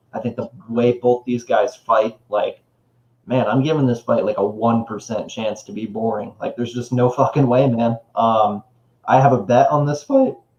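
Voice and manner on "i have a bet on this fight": voice breaking and cracking on the words. Previewing a fight, the speaker mentions a bet, voice cracking. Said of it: "voice crack there".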